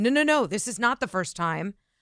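usual speaking voice

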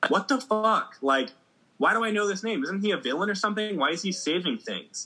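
high-pitched, shocked disbelief.

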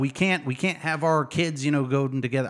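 put-on old Southern man voice with Southern accent. Explaining historical racism, slipping into a Southern old man voice.

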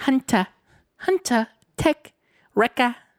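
put-on slow British accent, pitched very high. Imitating the cute little girl from the show saying team names: Omega's British accent. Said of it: "she's got, like, a British accent".

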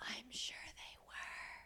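hushed whisper. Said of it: "Why are we whispering?".

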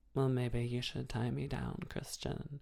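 put-on, hushed, very soft, breathy coquettish voice. Imitating a woman switching from her normal voice: put-on breathy coquettish voice. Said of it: "this breathy coquette voice that she puts on".

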